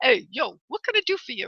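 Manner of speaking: soft, native New York accent. Talking to someone with a question, switching into a New York accent. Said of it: "New York accent".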